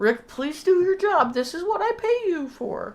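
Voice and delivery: strained calm, teeth clenched. Acting out a man telling rick to do his job, retelling through gritted teeth. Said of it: "he says through like gritted teeth".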